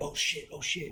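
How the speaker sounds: put-on panicked, freaked-out outburst. Retelling how people reacted: imitating people freaking out. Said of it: "freaking out".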